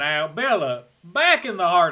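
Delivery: put-on thick southern drawl. Mocking how Jasper tells Bella his backstory, in Jasper's thick southern drawl. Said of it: "his accent gets more and more southern".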